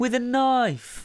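ordinary delivery

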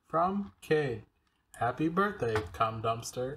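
put-on robotic, automated message-reading machine voice. In the car with mom and sister, a text gets auto-read aloud; robotic text-reading voice. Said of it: "a robotic voice comes in just like".

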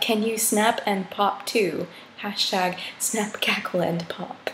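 ordinary talk

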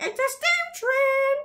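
voice shooting up to a very high-pitched outburst. Recalling a recorded blooper, the speaker re-enacts the moment, retelling voice going very high. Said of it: "my voice went so high".

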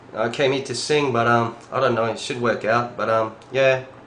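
broad, full Australian English accent. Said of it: "완전 호주 발음을 [name]님께서 시작해".

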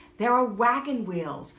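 ordinary delivery

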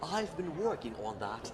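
practised British accent. In a Thai-English chat, showing off the accent they've practised: British accent. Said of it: "เห็นไหมสำเนียงอังกฤษนะฮะ with my British accent".

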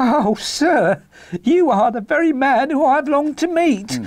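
very high, slow, drawn-out, eager cry. Narrating a story, a little fellow addresses a man as sir, crying out. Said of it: "cried the little fellow with outstretched hands and quivering fingers".

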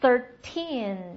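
put-on thirteen with weight on second syllable teen. Teaching English numbers ending in teen, thirteen stressed on second syllable teen. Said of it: "它的节奏是哒哒往后使劲啊".

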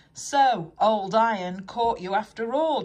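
loud, spoken through a chuckle. Edward, puffing back side by side with James, speaks to him, chuckling. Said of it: "chuckled Edward".

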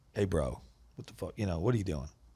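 guarded, defensive, confrontational tone. Retelling confronting a guy who almost opened the door: imitating own defensive challenge. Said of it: "I literally get very defensive".

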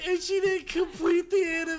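helpless, uncontrolled laughter.

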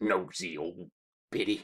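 muttered under breath. Narrator reads Ezra's remark about Betty, muttered. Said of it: "Ezra muttered".

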